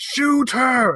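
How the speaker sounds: high yelled wild west gunslinger voice. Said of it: "And I'm yelling about Adri".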